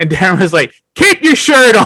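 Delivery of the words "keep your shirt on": raised-voice dismissive tone, loud and very high. Retelling a reply to a plea for help with a crowd: imitating Darren saying it loudly. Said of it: "It was the loudest I ever heard him".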